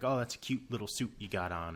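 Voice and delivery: ordinary delivery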